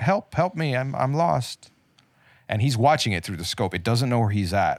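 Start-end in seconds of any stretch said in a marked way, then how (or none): 0.0-1.7 high, drawn-out, put-on feminine-voiced scream. Retelling a creature leaning back like a dog crying out for help, feminine-voiced scream. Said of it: "in a feminine voice scream out".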